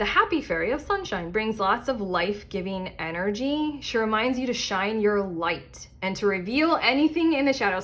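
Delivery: plain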